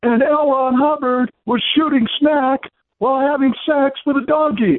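mock all-out high yell at top of lungs. Retelling how a buddy suddenly blurted this out, imitating his loud shout. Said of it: "in the loudest voice he could get".

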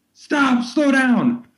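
mock, very high-pitched shouted yell. Retelling how a man in a stopped car yelled at two running friends: retelling a yell. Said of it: "he's yelling".

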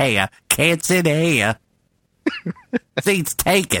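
slow, drawn-out put-on Southern drawl. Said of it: "Forrest Gump".

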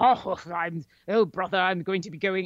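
put-on old-school British adventurer accent. Describing how two actors played brothers, doing a put-on British adventurer voice. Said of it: "putting on this British voice".

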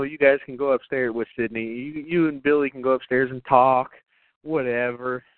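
ordinary talk, nothing marked

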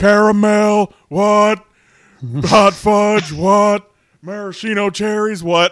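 very loud, slow, drawn-out bellowing shout. Listing sundae toppings at Aldi's while she hides her face, Stone Cold voice. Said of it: "in the Stone Cold voice".

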